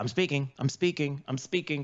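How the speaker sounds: ordinary talk, nothing marked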